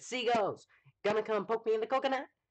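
high, loud, goofy comedy sketch voice. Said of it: "Seagulls Stop It Now bad lip reading sketch".

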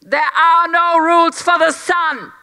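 loud shouting at full cry. A narrator reads a king answering a towering ghost empress, shouted back. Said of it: "Louis shouted back".

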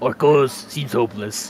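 speaking with a Spanish accent. Playing a game, attempting an impression when asked to try: Vortigaunt impression, Spanish-sounding. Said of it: "now I'm just a Spanish man".

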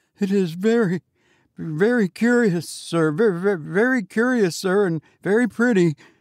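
terrified, high-pitched, frightened delivery. A narrator reads the sexton answering the goblin, half dead with fright. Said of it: "half dead with fright".

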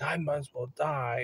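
tearful, sobbing, crying voice. Retelling how Mom, crying in the car, said this: imitating Mom crying. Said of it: "and she starts crying".

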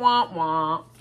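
low, drooping sad-trombone wah wah.

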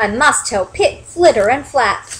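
ordinary delivery, nothing marked

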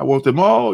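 plain

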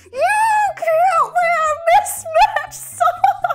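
put-on crying tantrum. Retelling a three-year-old's tantrum to listeners, imitating a crying tantrum. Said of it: "she was just crying, going".

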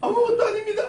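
very high squeaky voice, laughing and giggling through words.

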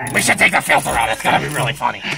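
very loud, booming, rough, rasping voice. Retelling what Frenchie said at the air box: imitating Frenchie's voice. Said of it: "I didn't do the voice right".

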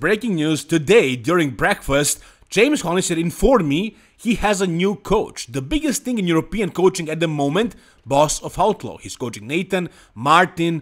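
plain

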